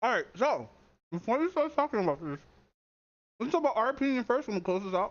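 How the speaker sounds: speaking around a mouthful, chewing. The speaker opens the discussion while still eating, talking with mouth full. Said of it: "you have your mouth full?".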